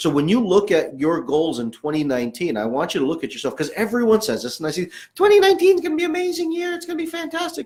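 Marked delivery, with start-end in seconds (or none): 5.2-7.7 pitch rising way up into a cartoon squeak. Echoing what everyone says about the coming year, in a Mickey Mouse voice. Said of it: "you hear my Mickey Mouse voice".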